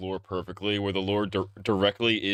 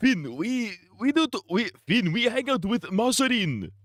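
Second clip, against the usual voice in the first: very high-pitched, put-on Japanese accent; 12 semitones higher than usual. Imitating a cartoon character for a joke: put-on japanese accent. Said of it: "That was more Japanese".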